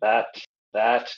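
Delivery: ordinary delivery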